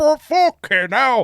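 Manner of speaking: put-on overreaction. Describing dashcam videos, the speaker imitates a Midlands bloke mock-overreacting. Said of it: "some bloke from the Midlands goes".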